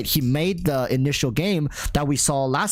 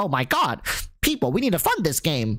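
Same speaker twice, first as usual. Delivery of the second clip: swooping, sing-song cartoon mouse voice; 3 semitones higher than usual. Imagining Mtash jumping in to back a game, doing Mtash in a Mickey Mouse voice. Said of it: "gave uh, Mtash like some Mickey Mouse voice".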